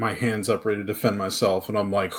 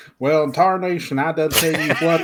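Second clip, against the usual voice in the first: put-on grandpa-style old man voice; 6 semitones higher than usual. Imagining what a character would say, acting it out: Boomhauer-like voice. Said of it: "my grandpa talked like that".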